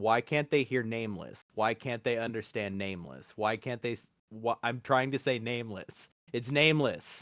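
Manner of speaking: ordinary talk, nothing marked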